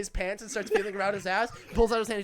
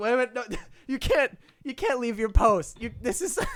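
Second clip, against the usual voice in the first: put-on words pushed out through laughter. Retelling what one man said to another, imitating laughing while talking. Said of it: "the other one like he's laughing".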